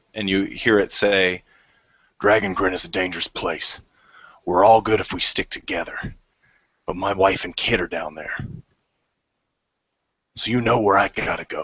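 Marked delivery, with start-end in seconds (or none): 2.2-11.7 low-register, pitched-down speaking voice. Narrator voicing an unseen speaker addressing the players, low voice. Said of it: "A low voice emanates toward you".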